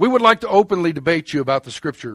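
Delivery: very loud, high, ringing voice. Retelling a visiting man challenging her before the congregation; imitating someone talking loudly. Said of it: "and then in a loud voice".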